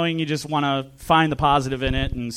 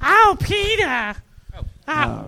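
put-on very high, swooping, drawn-out drunk woman voice; 13 semitones higher than usual. Showing another speaker one of his impressions: drunk Lois from Family Guy voice. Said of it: "drunk Lois from Family Guy".

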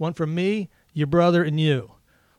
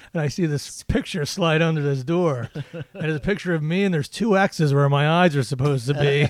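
usual speaking voice

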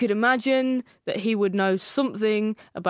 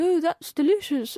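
pitched-up, put-on older British man voice; 7 semitones higher than usual. Imagining the presenter arriving home: Tim as a sixty-year-old British man. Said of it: "turns back into a sixty-year-old British man".

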